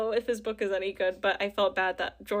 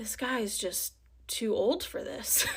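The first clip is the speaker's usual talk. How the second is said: put-on mutter under the breath, quieter; 5 dB quieter than usual. Retelling what the stranger next to them said: imitating a mutter under breath. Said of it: "said under his breath".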